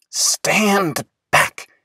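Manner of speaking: soft, high, hushed whisper. Willis, stopping still before a tall flower, warns: whispering. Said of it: "he whispered".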